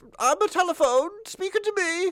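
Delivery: very high robot dog voice. Describing a police-box emergency scene, the speaker voices the dog: K-9 robot dog voice. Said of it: "My canine voice sounds like my Dalek voice".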